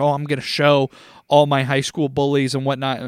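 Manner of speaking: ordinary talk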